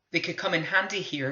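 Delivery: ordinary delivery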